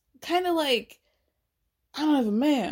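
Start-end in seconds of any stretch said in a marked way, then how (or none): 1.9-2.7 put-on jealous voice, pitched higher. Imitating the energy Danielle gives at the bar: imitating Danielle sounding jealous.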